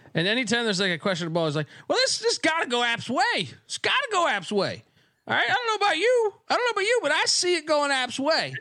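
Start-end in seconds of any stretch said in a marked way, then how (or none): 1.8-8.5 very high, swooping, over-the-top Southern drawl. Mocking a football announcer who favors App State: ridiculous Southern drawl. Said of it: "this like ridiculously Southern drawl".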